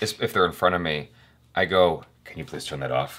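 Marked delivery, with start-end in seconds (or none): 2.2-3.2 very quiet, low, hushed dark-hero voice under the breath. At the theater, the speaker addresses the people in front of him, Batman voice. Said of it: "I put on my Batman voice".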